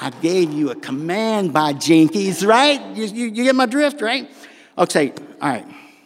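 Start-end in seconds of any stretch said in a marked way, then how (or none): 0.0-2.4 irritated voice, temper starting to climb. Retelling answering the truck's voice, temper rising: retelling own rising temper. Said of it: "It's starting already".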